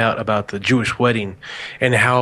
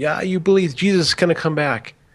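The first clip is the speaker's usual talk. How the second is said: high, jeering taunt with laughing ridicule; 5 semitones higher than usual. Retelling how people around them laughed at them, imitating people mocking them. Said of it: "they start all looking at me and laughing at me and going".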